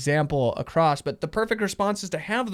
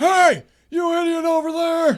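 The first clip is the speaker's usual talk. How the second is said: shouted outburst, pitched very high; 13 semitones higher, 7 dB louder than usual. Showing what raising a voice at a partner sounds like: mock shouting. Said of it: "raise my voice at you".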